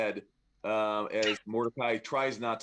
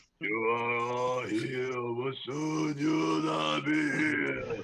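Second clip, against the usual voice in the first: loud, booming voice; 3 semitones higher than usual. Voicing a mysterious voice the players hear: booming voice. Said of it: "this booming voice says".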